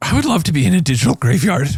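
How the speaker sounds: sinister clown voice. Musing about being in a digital graveyard: Pennywise-like voice. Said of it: "it sounded like Pennywise".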